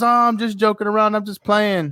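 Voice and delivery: high-pitched, joking, playful voice. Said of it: "He goes".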